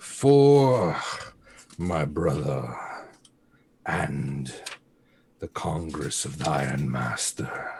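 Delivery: very low, throaty, guttural hissing snarl. Voicing a character shouting as she runs, in a guttural, hissing voice. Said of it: "in this guttural, hissing voice".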